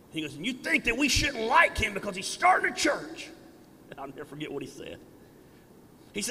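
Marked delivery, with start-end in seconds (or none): 0.3-3.2 rough, gravelly, high-pitched preacher cadence. Retelling what a preacher said during a church service, in a gravelly preacher's voice. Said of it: "He had that gravelly preacher's voice".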